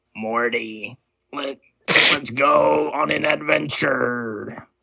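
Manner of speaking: dour, grim, gloomy character voice throughout. Asked for impressions, doing Rick calling to Morty: grim Rick impression. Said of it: "That Rick is grim".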